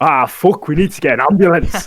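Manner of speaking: put-on broadest thick Scottish accent, loud and high. Retelling what a scottish head of year said: strong scottish accent. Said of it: "in the most Scottish accent".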